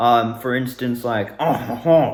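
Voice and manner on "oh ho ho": bad, overdone put-on French accent. Showing the trigger line for a French voice: bad French voice. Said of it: "gets me in my French voice".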